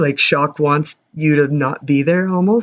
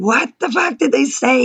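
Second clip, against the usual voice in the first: very high, demanding yell, pitched way up; 10 semitones higher than usual. Recounting yelling at him to find out what they said: retelling a yell. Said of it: "I'm like yelling at him".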